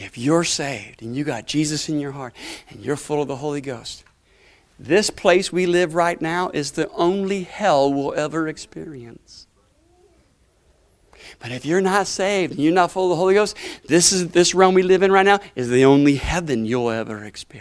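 deliberate, very slow, low preaching tone. The speaker repeats the point once more to listeners: said slowly. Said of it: "Let me say it slowly".

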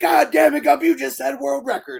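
shrill, loud, out-of-control drill sergeant yell. Retelling a movie scene, quoting the drill sergeant: imitating a drill sergeant going crazy. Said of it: "just starts going crazy".

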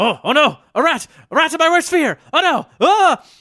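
very high, very loud cartoon shriek of panic. Voicing a character who leaps up in fear at a rat: Jeffrey voice, shrieking in fear. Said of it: "Jeffrey leaps and shrieks, uh, and like a cartoon".

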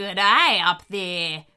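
dog-like growling voice. Narrator reads the lead dingo speaking up to animals in a tower, growling. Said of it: "growled the lead dingo".

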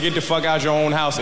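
ordinary talk

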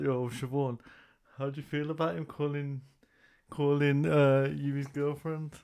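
usual speaking voice

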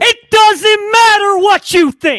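booming, high-pitched, slow, drawn-out delivery. Doing a quick impression for a co-host who asked for one: The Rock voice. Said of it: "That's what The Rock would say to you there".

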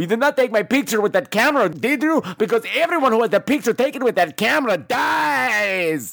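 put-on Spanish accent, building to a shout.

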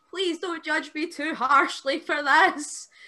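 play-acted, high scream in a full freak-out. Speaker retelling a companion screaming at a van that couldn't hear; retelling a scream. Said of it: "He started screaming at the van".

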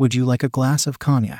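ordinary delivery

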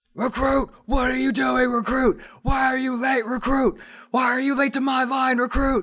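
very high, furious, relentless drill sergeant barking. Voicing Bronze scolding a late recruit in line: drill sergeant yelling. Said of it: "just starts yelling and going off".

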